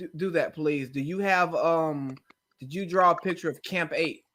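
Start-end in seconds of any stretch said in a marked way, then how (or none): 2.6-4.1 calm, deadpan, even-toned delivery. Asking someone about the pictures they drew, in a calm straight-faced voice. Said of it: "with a straight face in my calm voice".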